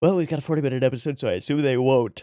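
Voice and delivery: yawning while talking. Podcast host, less caffeinated than usual, yawning while talking. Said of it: "I'm super yawny".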